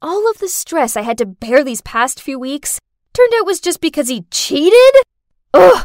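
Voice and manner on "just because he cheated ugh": loud, furious angry outburst. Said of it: "I was so angry!".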